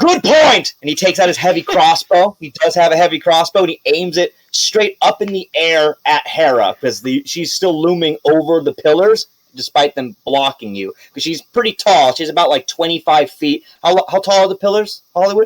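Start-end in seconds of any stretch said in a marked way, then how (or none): 0.0-0.7 much higher, eager knight voice. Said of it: "He goes".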